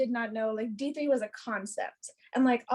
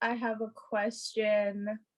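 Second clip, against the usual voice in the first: put-on dark, foreboding, ominous, slow and drawn out; 3 semitones lower than usual. Retelling what Kim said to them at their first meeting, mock-ominous imitation. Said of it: "except she did it so ominously".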